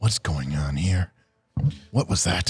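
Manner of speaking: low, soft, puzzled character voice.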